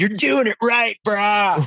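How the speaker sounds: grizzled rock-fan dude voice. Retelling what a fan said to him after seeing Calvin, imitating a grizzled rage fan. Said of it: "This guy turns out this like grizzled rage fan".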